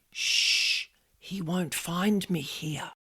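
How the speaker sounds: slow, hushed, secretive whisper. Retelling what a voice heard in the workroom said: imitating a whispering voice. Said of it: "this voice said in a whisper".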